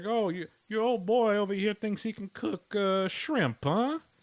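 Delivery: put-on very high Texan voice, big fat dude. Speaker imagines an adversary chef talking: big fat Texan dude voice. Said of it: "Maybe it's a big fat Texan dude. He's like".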